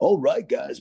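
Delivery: fake club DJ announcer voice. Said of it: "South Park fake D J".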